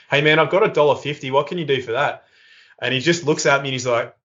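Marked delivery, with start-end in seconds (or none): none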